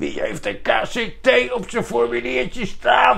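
rasping army officer voice, very high pitch. Retelling army intake, the man calling out KCT recruits; imitating the military man's speech. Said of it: "zo praten die".

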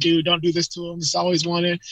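usual speaking voice

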